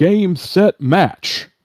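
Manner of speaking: shrill, high, loud, screaming stadium-announcer cry. Describing a minor illusion in a tabletop game: screaming announcer voice. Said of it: "announcer-like voice, uh, that kind of screams out".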